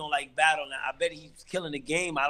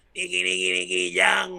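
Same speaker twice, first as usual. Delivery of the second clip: mock, messed-up drunk voice, screaming; 3 semitones higher than usual. Retelling how a drunk man in the park yelled his name: imitating drunk screaming. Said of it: "he would be screaming".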